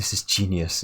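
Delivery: self-assured, confident, proud tone. Retelling the other speaker's idea for a podcast name: imitating a confident announcement. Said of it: "you said it with such confidence".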